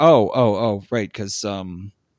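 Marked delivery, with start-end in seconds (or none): none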